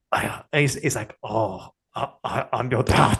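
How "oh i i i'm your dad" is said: very slow, drawn-out, faltering, halting delivery. Acting out a film scene on request, imitating a film character. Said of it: "Can you do an impression of what he says and sounds like?".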